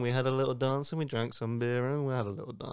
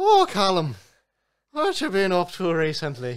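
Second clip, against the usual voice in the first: loud, sing-song, put-on fake Irish accent; 5 semitones higher, 7 dB louder than usual. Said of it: "I spoke in an Irish accent".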